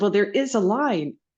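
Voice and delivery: put-on short, brusque, reproachful, curt tone. Retelling what a woman in line behind said: imitating a terse voice. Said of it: "in a terse voice said".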